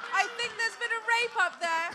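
very loud, high-pitched yell in British accent. Asked on a podcast to yell a line out, yelling in a British accent. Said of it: "Can you just yell out".

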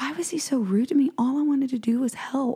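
put-on muttering under breath. Retelling what she said to her daughter, muttered under her breath. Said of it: "I just under my breath".

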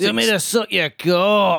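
put-on robot voice in a Glaswegian accent. Quoting a viral clip of a talking robot, in its glaswegian accent. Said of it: "to have a Glaswegian accent".

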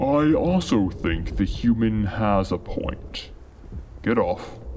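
grinding, cavernous giant voice. Reading aloud, a hill takes the human's side: voice of a hill. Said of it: "what a hill would sound like".

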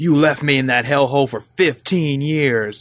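put-on angry, vengeful voice. Retelling a game teaser's narration: imitating an angry vengeful voice. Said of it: "the guy's just all angry".

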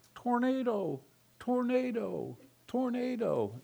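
very high disguised voice, thrown to sound elsewhere. Retelling calling out a warning to people nearby, in a thrown, disguised voice. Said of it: "did my voice in a throw-off kind of a way".

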